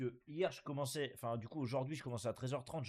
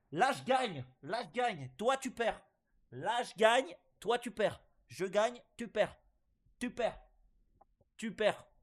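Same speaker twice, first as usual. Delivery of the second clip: yelling, higher and louder; 10 semitones higher, 7 dB louder than usual. Playing a casino game and winning money, shouting. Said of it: "Faut que j'arrête de crier".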